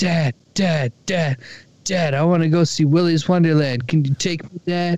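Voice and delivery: put-on excited, eager dog voice. Voicing a pumped dog begging its owner to see a movie: voicing an excited pumped dog. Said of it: "Sean's dog ... he's so pumped. He's like".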